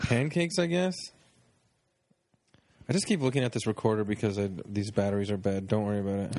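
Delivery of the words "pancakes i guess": mock hesitant, doubtful, unsure reply, pitched up. Imitating the other speaker's answer about pancakes: imitating a hesitant answer. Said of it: "You said that like you're just like".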